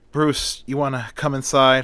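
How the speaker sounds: ordinary delivery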